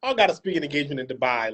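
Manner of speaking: calm, casual, offhand, throwaway delivery. Teasing a guest by imitating his line: imitating a calm, casual remark. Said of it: "y'all see how he said so calmly".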